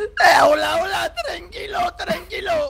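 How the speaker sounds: high, loud, panicked sobbing.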